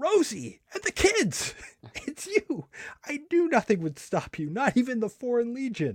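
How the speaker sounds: very high, shrill shout, cried out. Reading a comic aloud, Melvin shouts: acted shout. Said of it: "Melvin shouts".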